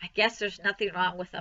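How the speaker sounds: plain reading voice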